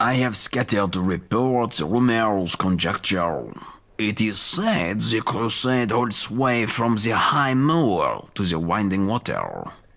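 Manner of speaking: put-on French accent in English. Character in an acted scene, speaking in a French accent. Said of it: "this guy's French accent".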